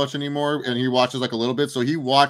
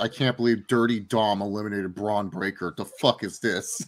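put-on annoyed, disbelieving, outraged rant; 5 semitones lower, 6 dB quieter than usual. Retelling a brother's reaction to watching the Rumble: imitating brother being pissed off. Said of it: "my brother was pissed".

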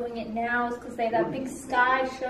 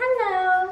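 mock, fake, very high-pitched voice. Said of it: "that fake voice".

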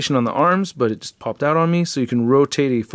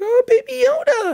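put-on very high, small little girl voice. Retelling how the daughter names the figure: imitating daughter's voice. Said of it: "she's like".

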